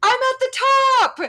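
play-acted very high, very slow, drawn-out yell. Retelling how your mom called down from the top of the hill, retelling mom's yell. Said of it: "she keeps yelling".

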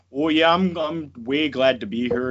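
put-on slow, drawn-out, played-up Canadian accent. Imitating a wrestler's voice from his comeback interview: Lance Storm impression, more Canadian. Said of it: "if you listen to his voice, like, he's just like".

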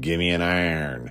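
put-on western Pennsylvania accent. Act out how everyone asks for this beer, in their best Yinzer accent. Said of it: "in their best Yinzer accent say".

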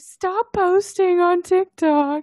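put-on annoyed teen voice, high, loud, slow whine.

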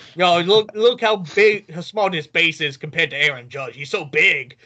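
put-on New York accent. Continuing a bit another speaker started, stereotypical Guido Yankee fan voice. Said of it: "stereotypical, like, Guido Yankee fan".

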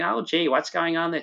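high, put-on American accent. Retelling what an old american couple said, stereotypical american accent. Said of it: "stereotypical American couple going".

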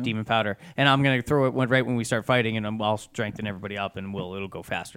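ordinary talk, nothing marked

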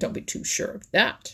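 biting, sharp, snapped delivery. Reddy Fox answers a claim he rejects, snapping. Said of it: "he snapped".

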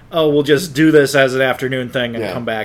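ordinary delivery

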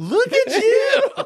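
very high, slow, delighted cry. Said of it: "and Will Ferrell goes".

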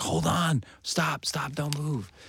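mock very slow, high, drawn-out shouted yell. Retelling a passerby calling out during the engagement photo: imitating a stranger yelling. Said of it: "this guy yells up".

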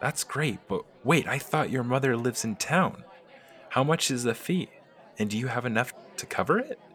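probing, suspicious, wary gnome rogue character voice. Narrating a story, the gnome questions a woman about a fee, Gimble forest gnome voice. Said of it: "Gimbal is a gnome. Particularly, he is a forest gnome. His class is that of a rogue. / Greed is a large part in Gimbal's character, as he's always trying to find the most valuable object and take it".

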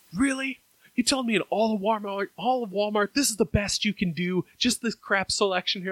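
loud yelling at a high pitch. Retelling a friend complaining to a store worker, imitating a friend yelling. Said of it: "Why are you yelling at this guy?".

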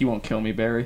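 ordinary talk, nothing marked

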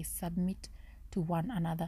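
normal talking voice

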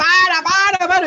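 shrill, high, full-volume, very loud yell. Retelling how the director yelled to stop the runaway horses: imitating Víctor Huerta yelling. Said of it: "empieza a gritar el weón".

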